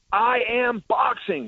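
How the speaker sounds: high, slow, in-your-face confrontational delivery. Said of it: "Conor leans in and he goes".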